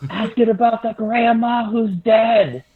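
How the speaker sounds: loud, screamed whisper, failing to stay quiet. Trying to whisper to Hude in character but basically screaming: screamed whisper. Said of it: "So I just basically scream".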